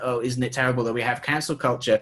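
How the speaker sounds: normal talking voice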